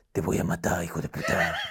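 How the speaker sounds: whispered, hushed, masked superhero voice. Retelling what his mother told him in the patio when he was a kid: Batman voice. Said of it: "ponía la misma voz de Batman".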